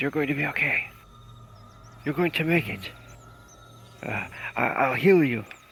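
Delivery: desperate yet knowing tone. A man holds his bleeding beloved in his arms, desperate but knowing. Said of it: "Desperate but knowing".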